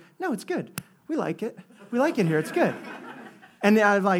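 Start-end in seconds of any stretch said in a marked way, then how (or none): 0.2-2.7 kind of nervous, uneasy, reassuring tone. Retelling a store cashier's reply to a complaint: imitating a nervous cashier. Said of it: "he looks at me kinda nervous".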